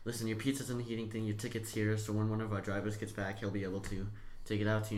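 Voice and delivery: plain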